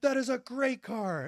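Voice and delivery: put-on livid outburst, very high and drawn out. Retelling how Pat Tillman reacted when his car was roasted: imitating Pat Tillman furious. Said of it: "And Tillman hits the roof".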